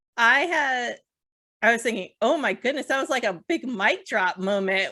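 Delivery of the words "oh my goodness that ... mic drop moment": ordinary talk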